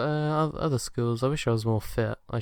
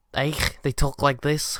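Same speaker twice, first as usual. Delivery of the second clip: loud, broad Liverpool (Scouse) accent; 2 semitones higher, 6 dB louder than usual. Talking about bad UK accents, the speaker shows how people talk in Liverpool: Liverpool accent. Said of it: "And in Liverpool".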